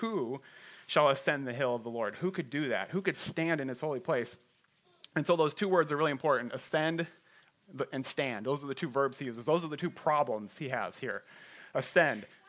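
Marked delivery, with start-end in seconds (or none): none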